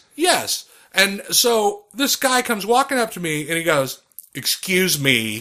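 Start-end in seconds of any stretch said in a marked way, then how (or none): 4.4-5.4 low, bitchy character voice. Retelling a guy approaching you at an after party, mocking a bitchy aunt voice. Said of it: "he says it like that fucking bitch aunt".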